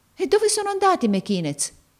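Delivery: anxious, heart-pounding, very high-pitched voice. Reading the boy Marco questioning the young lady, with a pounding heart. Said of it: "domandò Marco col batticuore".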